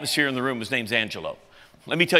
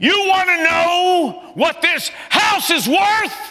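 mock shout, very high, very loud and slow; 5 dB louder than usual. Retelling how Angelo yelled across a silent room: imitating Angelo yelling. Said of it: "he yells".

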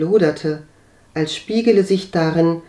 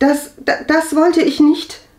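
flustered, embarrassed stammering, pitched very high; 11 semitones higher, 4 dB louder than usual. Katharina answers the preacher: stammering. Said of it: "stammelte sie".

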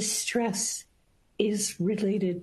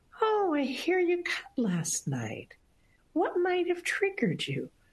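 deliberately light, cheerful, sing-song voice; 9 semitones higher than usual. Retelling greeting a patient at a hospital visit, deliberately keeping the voice light. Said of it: "Deliberately keeping my voice light".

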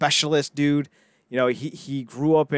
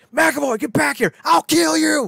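put-on very high, raspy, rough, furious angry shout; 13 semitones higher, 5 dB louder than usual. Retelling a movie scene where a bodyguard chases a running man: imitating an angry shout. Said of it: "now he's pissed".

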